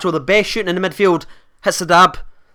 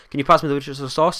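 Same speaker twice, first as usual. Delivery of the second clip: quick, rushed, run-together, rattled-off words; 4 semitones lower, 6 dB quieter than usual. Showing how they ask for Worcestershire sauce, said really fast. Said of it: "I say it really fast. I just go".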